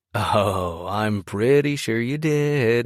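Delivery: very drawn-out, slow, teasing, obnoxious sing-song. Reading a teasing line to a blushing girl: obnoxious sing-song voice. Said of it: "in an obnoxious sing-song voice".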